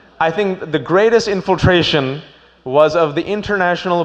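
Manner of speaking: ordinary delivery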